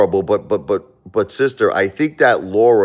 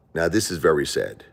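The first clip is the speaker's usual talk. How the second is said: usual speaking voice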